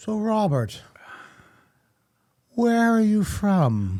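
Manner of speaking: very slow, sophisticated English lady voice. Retelling how a woman asked where he was from: imitating a sophisticated English-sounding woman. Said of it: "I thought she was English for some reason because the way she would talk".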